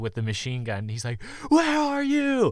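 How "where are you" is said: high, slow, panicked cry, losing composure. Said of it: "totally losing his cool".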